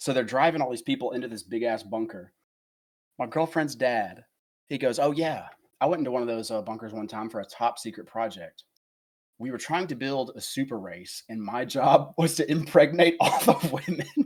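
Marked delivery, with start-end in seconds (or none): 5.0-14.3 put-on dead-serious, matter-of-fact delivery. Retelling what his girlfriend's dad told him, retelling a dead-serious statement. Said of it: "an ounce of sarcasm in his voice".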